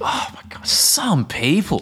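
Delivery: thoroughly fed-up, drawn-out exasperation. Showing a phrase used after a negative interaction, exasperated. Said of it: "this is actually something that we say as like a form of like exasperation".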